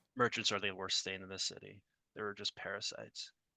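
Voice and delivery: barely voiced, hushed secret whisper. Playing a character who whispers to a boy about merchants: whispering. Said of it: "Perfect whisper".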